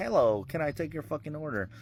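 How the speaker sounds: automated machine voice. Speaker imitating the AI that takes orders at McDonald's, in a McDonald's AI voice. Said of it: "you hear the A I voice like".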